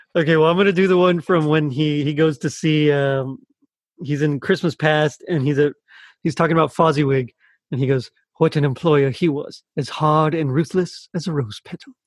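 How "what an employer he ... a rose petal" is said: put-on British accent. Quoting a line in a Michael Caine impression contest: Michael Caine impression. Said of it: "the best Michael Caine impression".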